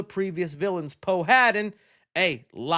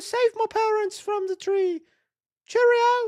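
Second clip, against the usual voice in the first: very high-pitched, put-on British accent. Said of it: "Perfect Tom Holland impression".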